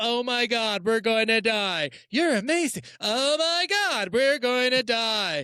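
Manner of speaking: mock panicked screaming. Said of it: "It's just like nonstop".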